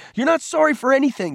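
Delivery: very high-pitched, shrill, angry shouting. Peter shouts back at Cole after Cole apologizes again: shouting. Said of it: "Peter shouted".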